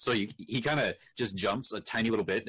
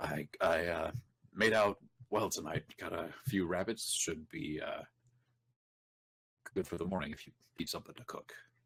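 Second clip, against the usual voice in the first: slightly hushed, soft, quiet voice; 3 semitones lower, 5 dB quieter than usual. As Ben, showing his rabbits without disturbing anybody, in a slightly hushed tone. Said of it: "he's talking in a slightly hushed tone".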